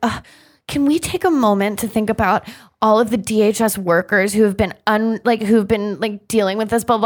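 long-suffering, snooty, put-upon delivery. Imitating Kirsten at her press conference: put-upon Kirsten impression. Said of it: "she acted so put upon".

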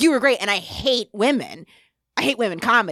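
eager, upbeat, really enthusiastic delivery. Retelling a fan's comment after a show: imitating someone saying it enthusiastically. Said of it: "they said it really, like, enthusiastically".

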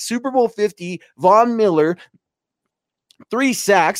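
voice catching with emotion. Praising a player's game, the speaker gets excited and choked up. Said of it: "I'm getting all excited and choked up here".

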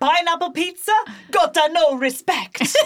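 loud, high-pitched, played-up put-on Italian accent. Reading a headline aloud, in an Italian accent. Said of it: "I love that Italian accent".

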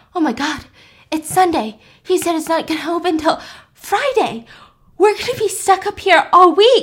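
high, full-on mock frantic panicking outburst. Telling a story, the speaker acts out Parker full-on panicking, imitating her. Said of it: "Parker is just full on panicking".

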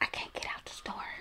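barely-there, very hushed whisper. Retelling a phone call to her boyfriend while lost in a store, retelling a whisper. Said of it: "And I'm whispering to him".

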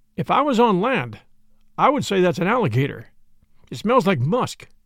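plain

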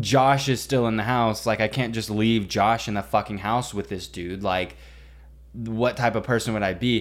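ordinary talk, nothing marked

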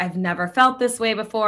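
ordinary delivery

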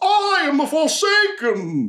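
booming, slow, very high, swooping arena proclamation. Voicing a giant armored man entering the ring: booming arena proclamation. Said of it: "throws his arms to the air, and goes".

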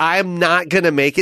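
ordinary talk, nothing marked

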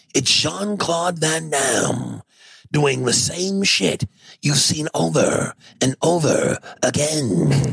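slow trailer announcer voice. Retelling Pablo Francisco's joke about Van Damme: Pablo Francisco movie trailer voice. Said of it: "do the guy with the movie voice".

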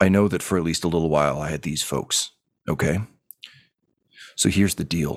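grim words muttered quietly under the breath. A character addresses the Emperor and whoever is out there, muttering.

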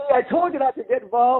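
play-acted, high-pitched yelling wife voice. Retelling a story, voicing a man's wife yelling at him, imitating a wife yelling. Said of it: "his wife was yelling at him".

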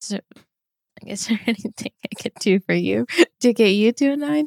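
talking through laughter. Asking the other speaker what would get them to a nine, laughing while talking. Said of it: "I don't know why I'm laughing".

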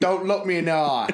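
mock drill-sergeant bark. Going in with Cockney John, speaker acts out his order: retelling Cockney John's army bark. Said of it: "he'd do it like army block".

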